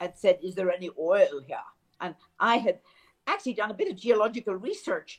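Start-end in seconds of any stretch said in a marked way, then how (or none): 0.4-1.6 prim, very proper English diction. Quoting a business person's question: Sir Ian Rankin's very proper English voice. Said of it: "in his very proper English voice".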